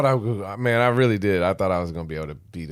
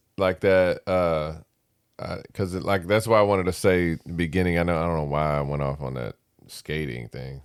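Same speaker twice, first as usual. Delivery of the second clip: ordinary delivery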